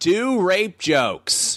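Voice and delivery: put-on shrill, very high, sloshed drunken yelling. Retelling a drunk heckler shouting during the set: imitating someone yelling. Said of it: "she's just yelling".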